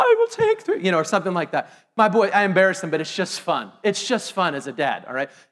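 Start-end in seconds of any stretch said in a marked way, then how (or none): 0.0-0.8 very high, goofy, silly put-on voice. A dad shows how he orders in line with his son, silly funny voice. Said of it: "So I make funny voices like".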